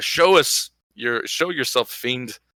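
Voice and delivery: booming, commanding, hugely amplified battle cry. Casting a spell to amplify the voice, calling out a fiend: magically amplified yell. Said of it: "increase my voice by three times and yell".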